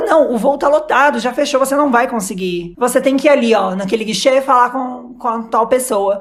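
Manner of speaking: plain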